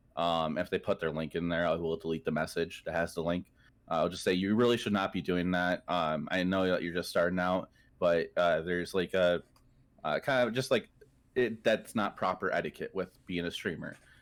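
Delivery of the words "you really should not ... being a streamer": ordinary talk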